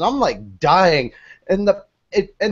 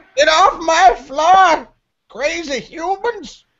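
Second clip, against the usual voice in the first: put-on cranky old man voice, very high, slow, drawn out; 10 semitones higher than usual. Imitating a dog as if he's an old man: old man voice. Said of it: "like he's an old man going".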